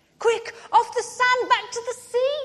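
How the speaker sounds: very high-pitched, hurried, rushed exclamation. Narrator reads the snail calling to the beached whale, crying out. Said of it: "cried the snail".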